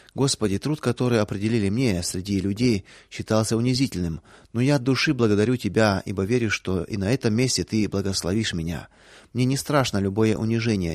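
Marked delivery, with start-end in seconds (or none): none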